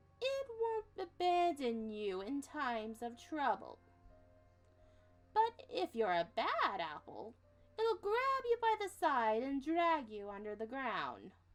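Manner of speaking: put-on slow sing-song grandma voice. Storyteller reading a grandmother's words aloud, in a grandma voice. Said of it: "I don't have a grandma voice".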